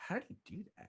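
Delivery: very high muttered aside under the breath. Retelling a movie scene where a man flips a knife: imitating muttering under his breath. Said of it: "under his breath".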